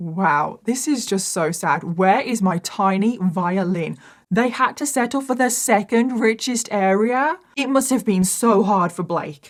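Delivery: sarcastic mock sympathy, fake pity throughout. Narrating a story about Blake to an audience, sarcastic tone. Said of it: "I'm being sarcastic".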